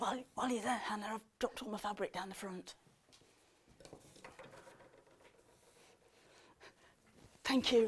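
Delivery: soft, hushed whispered aside. Speaking aside to a helper while presenting to viewers at home, whispering. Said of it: "I'm whispering".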